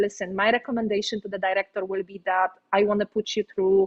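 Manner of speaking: usual speaking voice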